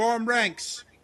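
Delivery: loud, high-pitched yelling. Voicing a caravan guard leader shouting an order: shouting an order. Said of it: "shout the words".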